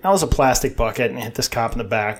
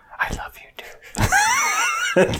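very high, very slow whisper spoken close in. Acting out a hypothetical reply to an angry stranger: imitating a whisper. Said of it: "And whisper in there and go".

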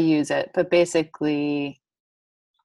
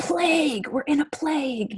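high-pitched scream full of alarm. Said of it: "he would scream".

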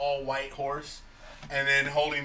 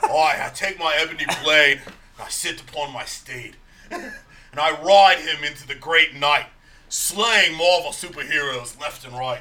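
very loud, big character voice, belted out; 8 dB louder than usual. Doing a voice for the others, sounding like the Butcher. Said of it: "You sound like the Butcher".

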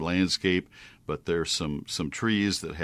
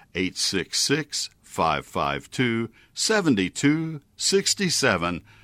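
repeated at a slower pace; 4 semitones higher, 4 dB louder than usual. Repeating a sponsor's toll-free number so listeners can note it, more slowly. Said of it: "I'll do it more slowly".

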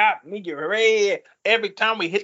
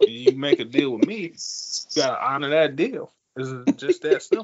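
deep, low, lowered voice, all business; 6 semitones lower than usual. Imitating J. Prince talking business: slow-talking J. Prince impression. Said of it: "talk real slow".

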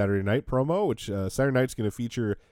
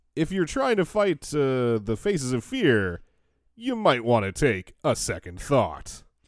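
mock knowing, swooping delivery with a pause; 3 semitones higher than usual. Imitating a man who thinks his remark is a clever point: imitating knowing delivery, pausing before punchline. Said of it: "the tone of his voice makes it sound like he's making a good point, or at least he thinks he is, or like a joke".

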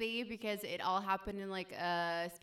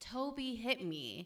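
put-on tearful, bawling, crying child sobbing; 3 semitones higher than usual. Retelling a little brother running up to mom: imitating a bawling child. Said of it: "crying, like, bawling".

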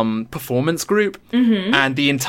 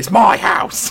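put-on old Cockney man accent, pitched up; 6 semitones higher than usual. Describing a horror film's old man jumping out at a family, in an old cockney man voice. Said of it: "he's this old Cockney man".

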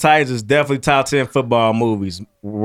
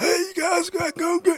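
very high, damaged, ruined-throat voice; 6 dB quieter than usual. Imitating a former gym teacher who survived throat cancer, imitating Carlson's voice. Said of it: "he talked like this".

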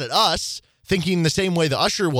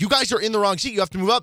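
put-on stern yelling usher voice; 6 semitones higher than usual. Retelling how the usher yelled at them about their seats: imitating the usher yelling. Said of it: "yelling at us".

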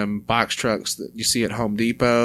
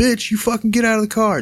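very high, crazed, hollering yell; 12 semitones higher, 3 dB louder than usual. Retelling a driver going after a woman in her car: imitating someone yelling. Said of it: "hollering, yelling".

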